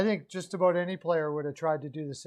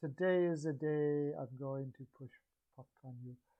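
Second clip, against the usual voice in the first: put-on French accent, much quieter and lower; 3 semitones lower, 12 dB quieter than usual. Retelling what someone said; French accent. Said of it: "French accent".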